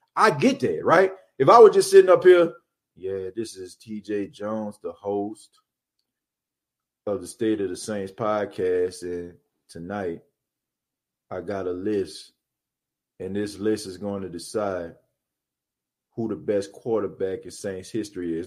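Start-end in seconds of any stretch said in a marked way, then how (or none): 3.0-18.5 dull, hushed, very low, flat bored monotone. Podcast host shows how he would sound introducing his show, boring delivery. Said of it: "if I was talking like that".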